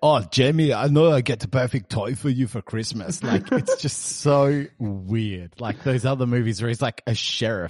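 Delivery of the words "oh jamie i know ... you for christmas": put-on thick, heavily laid-on Austrian accent. Describing Arnold playing an all-American dad, a speaker does a thick Austrian Arnold accent. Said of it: "this thick Austrian accent".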